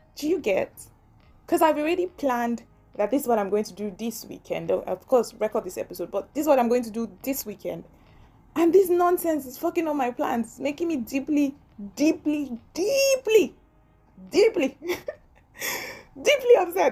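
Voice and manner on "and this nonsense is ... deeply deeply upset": speaking through laughter, pitched up. Complaining that a broken laptop ruined weekend plans, laughing while talking. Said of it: "I don't know why I'm laughing".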